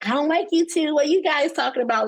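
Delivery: high, half-joking teasing with a real edge. Retelling what he said about the two of them, half-joking remark. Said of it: "jokingly, but not jokingly".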